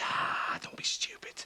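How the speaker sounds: hushed, whispered voice. Answering a worried question about being listened to: whispering. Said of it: "why are you whispering?".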